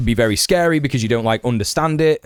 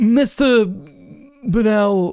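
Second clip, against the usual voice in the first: mock very high voice, hesitant and unsure; 10 semitones higher than usual. Showing the way he says the name Bernal, imitating someone's uncertainty. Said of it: "the way that he says it with such uncertainty".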